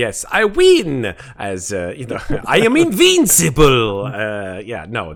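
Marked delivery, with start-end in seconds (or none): 0.0-4.0 high, booming, swooping character voice, slow. Chatting with the others, the speaker breaks into a King Julian voice. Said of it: "what I'm just going to call your King Julian voice".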